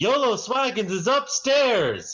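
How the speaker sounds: high, loud yell, as loud as possible. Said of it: "I yell as loud as I can".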